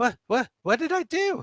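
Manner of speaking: very high, scared, frightened, stumbling stammer. Voicing a captured man dragged outside by the players: scared. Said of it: "he's looking really scared".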